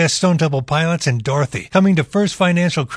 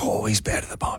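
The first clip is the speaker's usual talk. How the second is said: put-on children's hushed, breathy whisper; 6 semitones lower, 9 dB quieter than usual. Retelling how kids in the video react to him: imitating kids whispering. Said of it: "the kids are all whispering, like".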